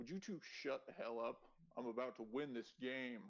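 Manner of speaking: big, bossy, commanding voice. Narrating a game scene, voicing someone the players hear nearby, in a booming voice. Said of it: "this kind of booming voice".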